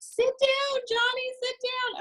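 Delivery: very high, frantic scolding voice. Retelling a parent following a running preschooler with the camera, imitating a frantic parent.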